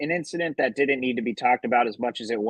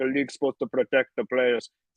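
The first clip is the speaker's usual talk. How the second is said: put-on Serbian-accented voice. Quoting a basketball player's complaint about the league, Jokic impression. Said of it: "He was like".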